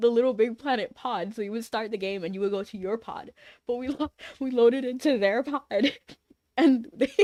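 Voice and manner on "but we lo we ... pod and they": words breaking up with laughter. Telling a funny story about a game, laughing while talking. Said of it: "let me calm down".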